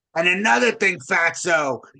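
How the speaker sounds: put-on hoarse, raspy woman's voice with New York accent. Retelling the last of a woman's thirteen voicemails, in a raspy New York voice. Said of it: "in a raspy New York voice".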